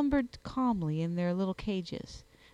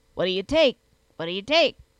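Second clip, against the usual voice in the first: booming, very loud, hoarse, guttural voice from the throat; 9 dB louder than usual. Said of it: "in the most guttural tones".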